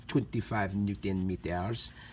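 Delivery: put-on German accent attempt that drifts toward French. Saying a measurement for fun, put-on accent, more french than german. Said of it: "I like to use it with a German accent when I say that ... I guess that was more like a French accent".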